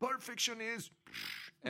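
acted, very high, swooping scream. Retelling a woman in the rafters cursing at the prize winner, retelling a scream. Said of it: "some woman up in the rafters is screaming".

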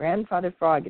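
usual speaking voice

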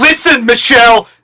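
loud, domineering shout.

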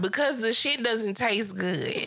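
ordinary talk

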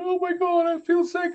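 put-on crying, pitched high, tearful. Mocking people on paranormal tv shows who run off, imitating someone crying. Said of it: "running down the road crying".

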